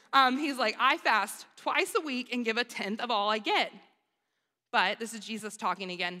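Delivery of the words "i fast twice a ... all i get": ordinary delivery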